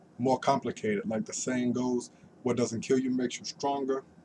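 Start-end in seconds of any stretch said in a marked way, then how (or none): none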